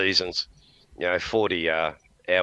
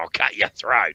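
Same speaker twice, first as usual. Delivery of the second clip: put-on Australian accent in a pirate voice. Praising a pirate series with australian actors, imagining one threatening: aussie pirate accent. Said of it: "Nothing like an Aussie going".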